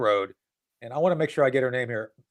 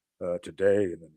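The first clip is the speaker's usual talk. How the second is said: put-on fancy newsreader diction; 8 semitones lower than usual. Mocking how NPR hosts sound while reading a news item, NPR announcer voice. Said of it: "Do they all go to the Thurston Howell School of Diction to get that voice?".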